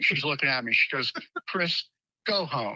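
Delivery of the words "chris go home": put-on suppressed laugh, much slower. Retelling what a woman said to him, imitating someone holding back laughter. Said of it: "She's trying to keep from laughing".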